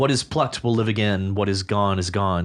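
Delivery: normal talking voice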